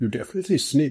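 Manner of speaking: usual speaking voice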